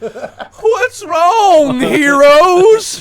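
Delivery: put-on drunk, stumbling voice, very high and loud. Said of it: "stumbles towards you guys".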